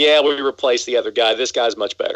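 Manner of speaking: ordinary talk, nothing marked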